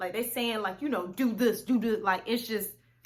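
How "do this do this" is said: put-on aggressive spirit voice, louder. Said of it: "one voice would be aggressive".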